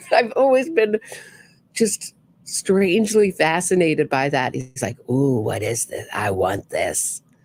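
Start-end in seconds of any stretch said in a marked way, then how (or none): 5.1-7.2 very low, eerie, unsettling, weird creepy voice. Describing him at a bathroom microphone, in weird creepy Robert Durst voice. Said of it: "In his weird, creepy voice".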